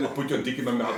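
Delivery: plain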